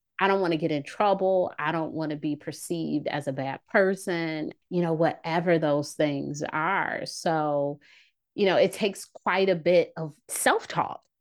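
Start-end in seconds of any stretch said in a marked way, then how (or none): none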